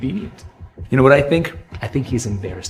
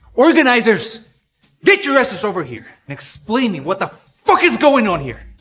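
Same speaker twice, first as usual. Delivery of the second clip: shrill, very high-pitched yelling; 9 semitones higher, 4 dB louder than usual. Calling the organizers over to explain the performance chart: yelling. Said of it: "Yelling in a place like this".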